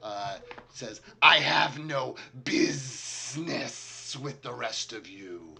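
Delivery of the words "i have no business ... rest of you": very loud, booming, very slow, drawn-out hissing voice. Game master voicing a huge creature addressing the party: hissing. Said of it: "he kind of hisses at the lot of you".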